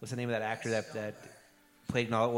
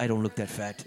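plain

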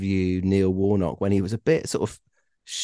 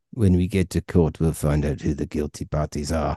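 bad, put-on South African accent; 4 semitones lower than usual. Retelling a goalkeeper's stern reply about a court case: terrible South African accent. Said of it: "I'm gonna do a terrible South African accent".

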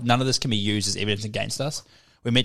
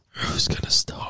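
weird, breathy, half-whispered superhero voice. Speaker repeating a joke line in a weird Batman voice. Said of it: "You'll sound like the weird Batman voice".

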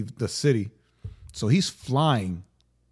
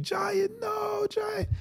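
put-on child crying, much higher, quieter; 4 dB quieter than usual. Parent retells their son's reaction, imitating son crying. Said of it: "He's all like crying".

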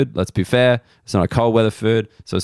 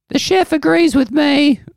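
very high, swooping put-on old woman voice; 4 dB louder than usual. Retelling what a waitress said about the chef: imitating a waitress in an old voice. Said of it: "why am I making her old?".

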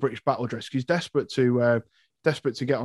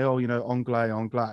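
usual speaking voice

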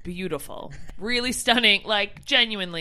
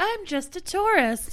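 put-on Canadian accent, very high and slow; 10 semitones higher than usual. Speaker retells how Steph answered an angry local, in a put-on Canadian accent. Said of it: "Steph pulled the Canadian accent".

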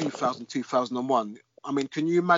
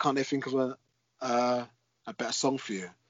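normal talking voice

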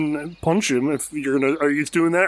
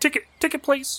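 chittering squirrel voice, much higher pitch; 11 semitones higher, 3 dB quieter than usual. Voicing a squirrel that the player's character approaches, in a chittering squirrel voice. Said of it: "It chitters at you and says".

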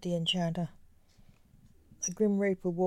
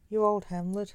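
usual speaking voice

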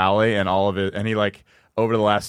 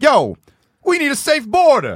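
very high, slow, swooping put-on voice; 7 dB louder than usual.

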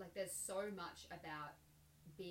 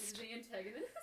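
laughing while speaking, higher and louder; 5 semitones higher, 4 dB louder than usual. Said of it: "Why are you giggling?".

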